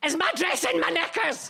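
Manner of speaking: very loud, big, high-pitched Scottish voice. Retelling a woman's red carpet panic in front of Martin Scorsese, speak in a big Scottish voice. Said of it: "she's got a big Scottish voice".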